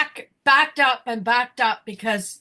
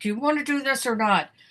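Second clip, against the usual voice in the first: put-on speech through gritted teeth; 3 dB quieter than usual. Retelling what the speaker said to him, retold through gritted teeth. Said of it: "my gritted teeth".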